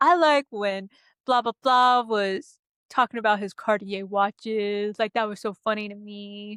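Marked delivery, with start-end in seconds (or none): 0.0-5.0 put-on dude-bro voice. Speaker imitating how the guys will answer what they liked: bro voice. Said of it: "That's that's my bro voice".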